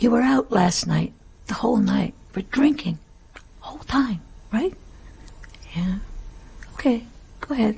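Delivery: put-on very quiet intimate voice. Retelling how the director reassured actors: imitating someone talking very quietly. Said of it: "he'd be talking very, very quietly".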